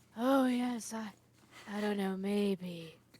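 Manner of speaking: dark and brooding delivery. Describing a player's cleric character in a role-playing game, doing the Edgy Priest voice. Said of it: "the character's voice was literally".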